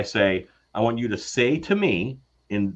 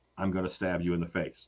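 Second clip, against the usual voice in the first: mock low, menacing, scariest possible delivery; 5 semitones lower, 9 dB quieter than usual. Retelling a phone call from an auditioner: imitating a scary threat. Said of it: "say to me in the scariest way possible".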